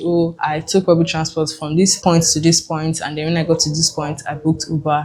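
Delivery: ordinary delivery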